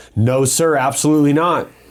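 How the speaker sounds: play-acted, slow, steady, assured, confident tone. Retelling how a friend answered the officer's question: imitating a confident denial. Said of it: "when he said it with confidence".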